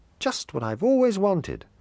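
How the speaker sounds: loud, very high, exclaiming cry. A little boy sees his presents on the table, cried out. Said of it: "he cried".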